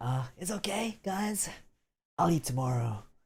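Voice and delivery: weak, hungry-sounding voice, a touch high. Imagining a starving character begging friends for food: Doppio voice, weak and hungry. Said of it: "imagine him doing, saying that".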